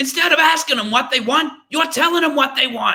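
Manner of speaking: very high, loud shouting rant, belted out. Retelling a shouting car-company boss's line to workers, in Danny DeVito voice. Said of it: "Can I do it in Danny DeVito's voice".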